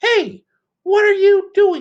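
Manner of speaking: tiny, very high-pitched piping goblin voice. Narrator voices a goblin surprising Herschel as he lights candles, small goblin voice. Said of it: "he heard a small voice".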